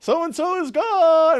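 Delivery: very high, drawn-out, full-lung, top-of-the-lungs yell. Recalling a funny moment from suicide watch, retelling a shout at full volume. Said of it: "at the top of his lungs".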